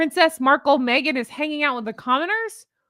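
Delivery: ordinary talk, nothing marked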